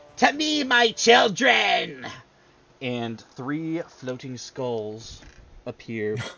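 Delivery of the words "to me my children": very high, slow, loud villainous battle cry. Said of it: "yells out".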